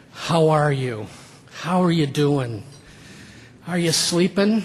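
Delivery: mock-pitying, imitated grave concern and sympathy. Imitating how people ask after you, in a mock-pitying concerned tone. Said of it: "that tone of voice that suggests you've just had a horrible medical diagnosis".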